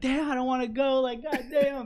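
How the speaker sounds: mock high-pitched frustrated scream. Recounting getting in the car every morning not wanting to go, retelling own screaming. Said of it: "I was, like, screaming".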